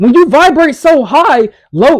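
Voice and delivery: voice cracking and breaking partway through the phrase. Giving encouragement to listeners, voice cracking mid-sentence. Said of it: "look at my voice cracking".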